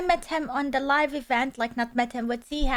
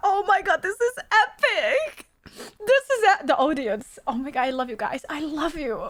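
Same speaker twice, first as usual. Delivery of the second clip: tearing up, teary and emotional. Reacting to the audience's tribute, tearing up. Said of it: "This actually is making me tear".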